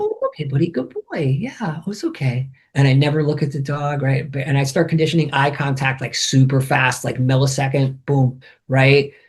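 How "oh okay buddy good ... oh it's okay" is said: quieter, soothing, calming voice. Showing how he talks to a petrified dog for ninety minutes: voice for a petrified dog. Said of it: "I talk like this for ninety minutes because the dog is petrified".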